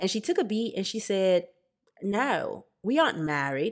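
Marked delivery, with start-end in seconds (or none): 2.0-3.7 slow, bad put-on Australian accent. Retelling a woman's answer when asked about inviting her boyfriend: bad Australian accent. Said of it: "I know my Australian accent was bad".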